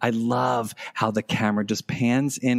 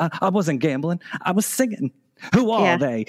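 put-on old-movie style speech, much higher pitch; 7 semitones higher than usual. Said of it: "her voice that she's doing in that scene is so like 1930s".

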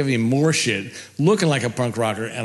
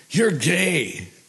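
acted, high-pitched, drawn-out screamed delivery; 6 semitones higher than usual. Retelling how a heckler in the crowd screamed at the stage: imitating a heckler screaming. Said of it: "he screams at me".

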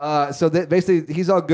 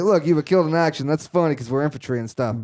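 ordinary delivery

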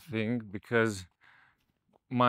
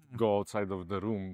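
ordinary delivery

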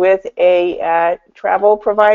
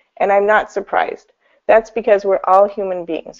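ordinary talk

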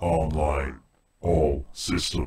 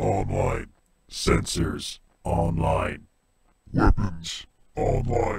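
robotic, mechanical voice; 4 semitones higher than usual. Voicing a machine character in a robotic voice. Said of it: "modifying your voice for robotic voices".

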